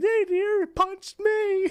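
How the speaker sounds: mock sobbing, very high-pitched and drawn out. Retelling how a woman ended up three years later: imitating someone crying. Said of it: "she's crying like".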